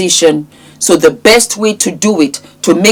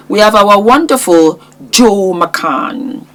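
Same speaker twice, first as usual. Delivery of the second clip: dry, sarcastic mock-admiring tone on wonderful; 2 semitones higher than usual. Introducing a person from the news story: sarcastic. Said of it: "I'm being sarcastic".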